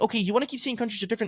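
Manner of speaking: soft, irritated, agitated and needled. Retelling own reply to an agent who kept repeating herself: retelling own agitated reply. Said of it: "I'm now getting a little bit agitated".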